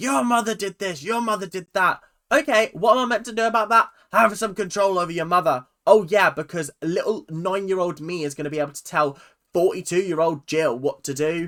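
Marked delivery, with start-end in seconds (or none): 0.0-2.0 mock, derisive, scornful shouty mild ranting yell. Mocking how Abby scolds Kendall, imitating Abby shouting. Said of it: "why are you screaming and shouting at Kendall".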